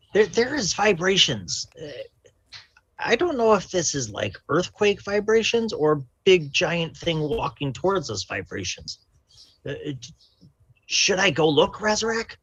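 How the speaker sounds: put-on high-pitched kobold creature voice. Player voicing a kobold asking Razarak a question, kobold character voice. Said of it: "I am a kobold. / [name] goes up and cups some water in his hand and drinks it. / I will test it for you, my lord".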